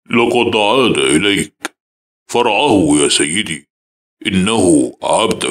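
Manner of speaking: very deep, coarse, broken-up, menacing voice. In a nightmare, the father-in-law bows before the house: thick, frightening voice. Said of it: "ويقول بصوت غليظ ومخيف".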